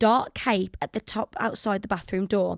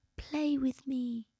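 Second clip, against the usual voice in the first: put-on eerie, spooky little ghost-child voice; 3 semitones higher, 10 dB quieter than usual. Reading a listener's ghost story aloud, doing the ghost's voice: put-on ghost child voice. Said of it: "that's the voice I'm, I'm interpreting".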